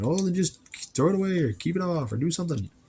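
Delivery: quick, high-pitched mock yell. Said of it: "probably yelling at me, going".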